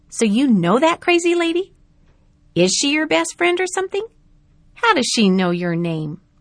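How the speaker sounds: smug, jeering, mocking. A girl questions the narrator about a woman the others laugh at; smirking. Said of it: "Natalie smirked and again asked".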